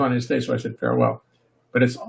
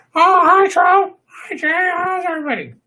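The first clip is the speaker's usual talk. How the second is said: silly puppet voice, very high, slow and ridiculous; 4 dB louder than usual. Showing ventriloquism with the sidekick Trophy: ridiculous Trophy voice. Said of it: "with a ridiculous voice and my brilliant ventriloquism".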